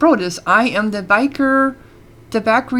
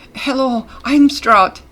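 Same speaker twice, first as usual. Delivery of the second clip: trembling, quivering voice, fearful and nervous; 3 semitones higher than usual. Narrator voicing a nervous serval speaking to the stranger who terrifies her: quivering nervous voice. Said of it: "She says in a quivering voice".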